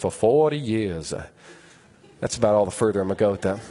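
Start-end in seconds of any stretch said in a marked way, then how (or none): 0.0-1.1 put-on grand documentary film narrator voiceover. Telling a story about asking to use the bathroom, in Morgan Freeman narrator voice. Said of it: "in that great narrator voice of Morgan Freeman".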